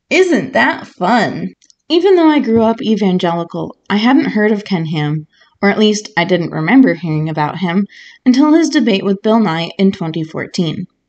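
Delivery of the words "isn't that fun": sarcastic, dry aside, sweetness not meant. Reacting to a quote just read aloud about museum locations, sarcastic.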